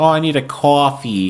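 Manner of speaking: thick Long Island accent. Denying having the local accent, then demonstrating it: heavy Long Island accent. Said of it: "I don't have a typical Long Island accent. Like I don't pr- pronounce coffee and orange".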